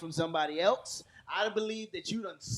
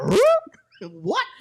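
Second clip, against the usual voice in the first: put-on cartoon dog voice, higher and louder; 11 dB louder than usual. Acting out a reaction to a break room scene: Scooby-Doo voice. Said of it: "I would've went straight Scooby-Doo".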